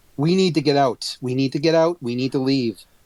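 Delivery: ordinary delivery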